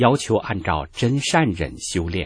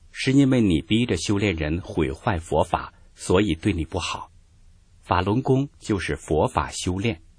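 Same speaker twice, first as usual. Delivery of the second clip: normal talking voice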